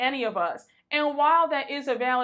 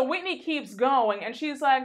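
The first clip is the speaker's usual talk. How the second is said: ordinary delivery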